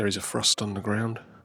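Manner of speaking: speaking very quietly. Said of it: "I'm speaking very quietly because it's half past six".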